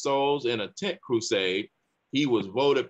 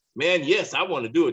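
mock thrilled, excited and eager tone; 3 semitones higher, 4 dB louder than usual. Retelling the teacher's reply when asked to teach the class: imitating an excited voice. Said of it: "Just excitement in his voice".

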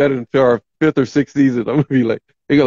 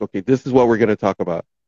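put-on all-business tone, low and serious; 5 semitones lower than usual. Imitating Jess at the show meeting: imitating Jess getting serious. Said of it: "she gonna get all serious and go like".

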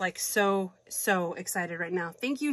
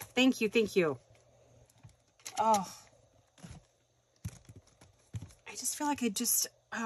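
overflowing, fumbling, gushing excitement; 2 semitones higher, 5 dB quieter than usual. Opening items and thanking someone for them, excited. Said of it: "I'm so excited right now".

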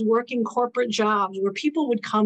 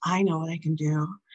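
jokingly sultry put-on voice, much lower pitch; 5 semitones lower, 3 dB quieter than usual. Retelling a line jokingly said to him, in a very sultry voice. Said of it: "jokingly said in a very sultry voice".

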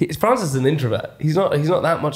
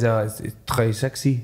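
put-on male French accent; 3 semitones lower than usual. Reminding someone what Mars said when she came out in her bikini, imitating Mars with a put-on French accent. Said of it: "this is my French accent".

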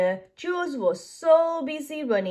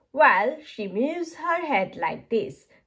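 plain

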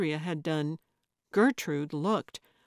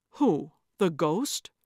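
usual speaking voice

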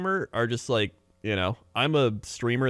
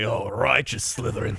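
put-on British man's accent, slower. Speaker recalling a favorite British saying, imitating a British guy. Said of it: "that one British guy just being like".

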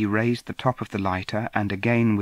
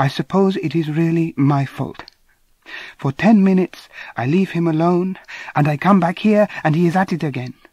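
apologetic, near-perfect English, high and raised; 7 semitones higher, 7 dB louder than usual. Reading a story, a woman apologizes for a man's behaviour: almost perfect english. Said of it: "She spoke almost perfect English".

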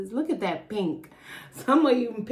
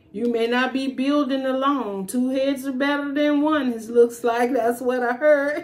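put-on slipped into unusual accent. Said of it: "Why did I just do that accent?".

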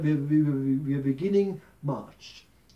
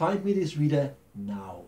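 stern, put-on German accent. Retelling what the speaker said to the universe: put-on stern German accent. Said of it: "In my very German stern accent".

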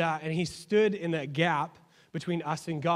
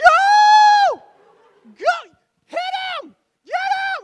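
shrill, very loud, very slow, swooping screams; 14 dB louder than usual. Recalling running with the ball while Mom ran the sidelines, retelling mom's screaming. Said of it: "she's like screaming".

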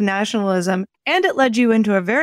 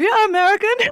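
put-on thick, heavy German accent, pitched very high; 12 semitones higher than usual. Voicing German Lutherans as if they were speaking, heavy German accent. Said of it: "through a heavy German accent".

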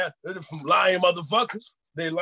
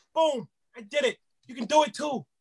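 put-on ranting comedian voice, higher; 7 semitones higher than usual. Answering how he got into impressions, as the comedian: Bill Burr impression. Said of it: "I'm gonna answer you like fucking Bill Burr".

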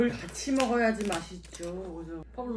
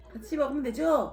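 consciously lifted, deliberately higher speaking pitch; 5 semitones higher, 4 dB louder than usual. Speaker raises the voice tone since it sounds too low, higher-pitched voice. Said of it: "목소리 톤을 좀 높여보겠습니다. 왜냐, 너무 중저음이".

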